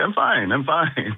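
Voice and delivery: high, dazed, insistent voice.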